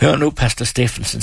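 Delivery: ordinary delivery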